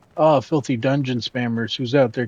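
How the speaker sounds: put-on, teasing, tongue-in-cheek, sarcastic, joking tone. Player running through an area, quoting a guy down here: retelling a sarcastic remark. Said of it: "He's being sarcastic".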